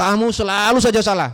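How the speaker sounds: put-on angry teacher voice, high-pitched scolding. Acting out a controlling teacher's scolding, mock-angry in a high tone. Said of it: "Ya dengan nada tinggi".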